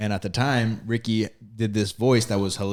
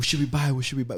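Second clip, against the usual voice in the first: put-on whisper, pitched higher; 3 semitones higher than usual. Retelling pulling up to a drive-thru with cousins: imitating a whisper. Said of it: "We're all whispering".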